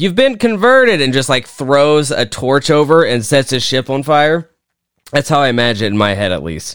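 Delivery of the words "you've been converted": play-acted, very high, shouted call. Picturing him yelling at a ship's captain across the room, retelling a yell. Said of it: "he's like yelling at the captain".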